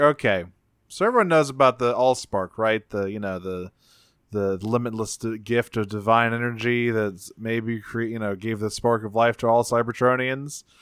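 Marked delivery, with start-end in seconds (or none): none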